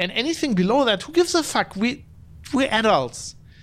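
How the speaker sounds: exasperated, worked-up outburst. Speaking on his episode, the host starts getting worked up. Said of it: "I'm getting worked up here".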